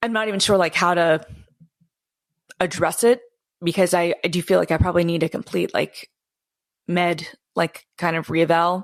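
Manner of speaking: emotional, choked-up voice. Talking to another speaker about having depression, getting emotional. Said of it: "I'm getting emotional even talking about it".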